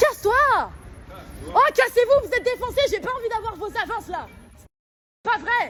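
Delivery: loud, high-pitched, furious yelling.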